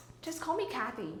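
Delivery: quick, rushed, put-on American accent. Giving herself an easier name in a rushed american accent. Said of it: "So I rush through an American accent and say".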